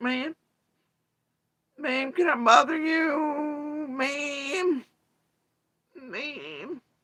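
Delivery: very high, very slow fake crying, fake-tearful. Retelling a man who pretends to cry while begging: imitating fake crying. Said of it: "He gets tears going".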